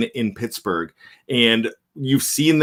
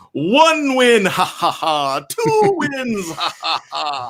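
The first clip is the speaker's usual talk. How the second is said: each word drawn out with a swooping pitch; 7 semitones higher than usual. Joking that the Count will be on the show next week, doing a Count impression. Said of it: "that's not a bad impression".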